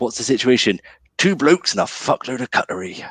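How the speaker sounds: put-on southwest English West Country accent. Speaker performs a favourite line from a film: West Country accent. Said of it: "the best line that I love to do in that accent".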